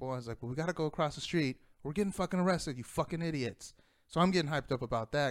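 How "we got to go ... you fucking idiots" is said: acted-out, put-on yelling. Recounting an incident with some Air Force guys, the speaker is retelling a yell. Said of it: "and I'm yelling".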